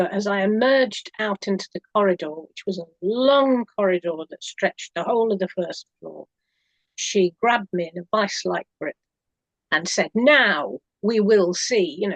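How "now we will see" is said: put-on very slow, theatrical, big booming voice. Recalling a woman who grabbed the speaker in a corridor, retelling her big booming voice. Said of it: "big booming voice".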